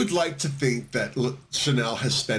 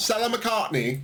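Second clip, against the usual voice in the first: put-on British pronunciation, very high-pitched; 9 semitones higher than usual. Showing how a designer house name sounds: British accent. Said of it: "if you say it with a British accent".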